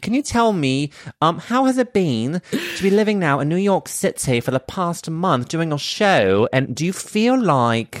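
put-on high-pitched British accent. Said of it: "so I'll go British".

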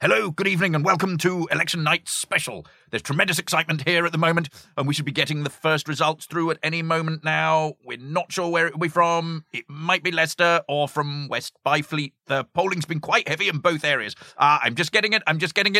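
breakneck presenter delivery. Reading the start of a sketch aloud to the others, as John Cleese talking very fast. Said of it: "John Cleese talking very fast".

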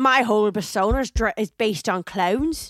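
awful Irish accent attempt. Imitating what they're saying, in a bad irish accent. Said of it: "That was an awful accent".

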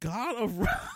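laughing while talking. Reading out a list of award nominees, laughing while talking. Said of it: "Can't even say it without laughing".

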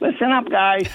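tiny, squeaky, high little voice. Retelling the goalie addressing the team after a bad goal, in Fierzy's squeaky little voice. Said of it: "He's got that squeaky little voice of his".

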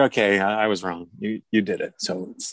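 normal talking voice

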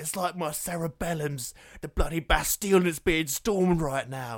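very loud, high, belted character voice. Quoting a film character describing a hangover: Dom Hemingway voice. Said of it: "He's like".

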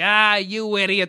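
smug, self-satisfied, clever-clogs put-on henchman voice. Acting out a henchman scolding his partner: acting out a henchman who thinks he's clever. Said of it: "the one who thinks he's clever is like".

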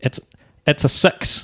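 put-on New Zealand commentator accent. Telling Tone what they love about New Zealand games, doing a New Zealand commentator impression. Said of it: "I do love a bit of New Zealand commentary".

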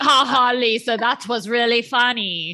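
fake ha-ha chuckle, phony tone. Retelling how James reacted to Lisa's joke, imitating James fake laughing. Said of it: "James is fake laughing at Lisa".

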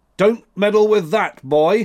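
stern, severe voice. The old man warns the boy Max off the liquid, in a severe tone. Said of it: "said he in a severe tone".

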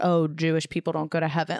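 ordinary talk

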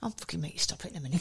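put-on swearing under breath. Retelling swearing under the breath while a man shushed a little boy, retelling swearing under breath. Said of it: "I'm swearing under my breath".

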